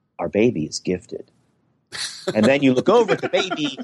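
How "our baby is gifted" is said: grave, very low, confiding, hushed half-whisper. Imitating parents telling anyone who will listen about their baby, imitating a serious hushed half-whisper. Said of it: "hushed whisper to anyone who can listen".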